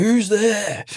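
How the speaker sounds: very high, frightened, jumpy, panicked call. Retelling a night exercise where a trainee on picket panics: imitating a panicked soldier. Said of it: "he's freaking out".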